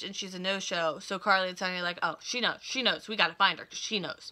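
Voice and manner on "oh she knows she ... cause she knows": usual speaking voice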